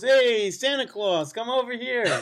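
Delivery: very high-pitched street-vendor style calling out. Retelling how a vendor trying to sell stuff called out: imitating a street vendor calling out. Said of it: "Guy comes up to me trying to sell me stuff".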